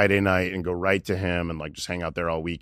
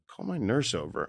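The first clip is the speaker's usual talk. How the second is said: put-on childlike pleading voice, higher and quieter; 5 semitones higher, 5 dB quieter than usual. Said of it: "he was almost, like, childlike".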